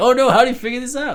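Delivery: high dismayed cry.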